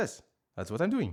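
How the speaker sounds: put-on French-accented grandmother voice. Replying to instructions being read out, the speaker is imitating french grandmother. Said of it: "I'm just doing an impression of my grandmother, who is French".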